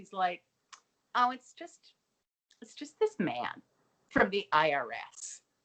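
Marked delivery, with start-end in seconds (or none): 1.1-5.4 very slow, bashfully coy, sing-song delivery. Speaker retelling a character's reply about her date, imitating a coy tone. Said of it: "very coy".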